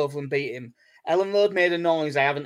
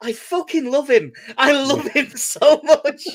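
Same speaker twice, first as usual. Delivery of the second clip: shrill, high, loud, slow drawn-out shouting; 10 semitones higher, 8 dB louder than usual. Recalling watching a player's assist, the speaker reenacts his own shouting. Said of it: "I just started shouting".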